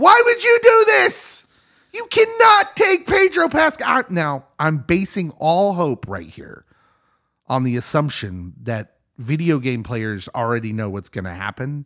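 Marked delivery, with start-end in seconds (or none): 0.0-3.9 high-pitched, shrill, loud yelling outburst. Retelling own reaction to the episode: imitating own yelling at TV. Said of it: "it ends with me yelling at my T V".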